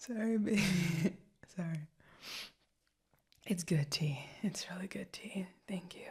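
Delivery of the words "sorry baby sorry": giggling through the words, leftover laughter. Apologizing after a joke of one's own, laughing while talking. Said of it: "I'm laughing at my own joke".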